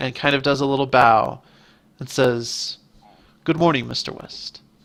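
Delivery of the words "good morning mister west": very soft, gentle, almost purring voice. Narrator voicing a furry creature greeting mister west with a bow, soft almost purring voice. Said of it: "in a very soft, almost purring voice".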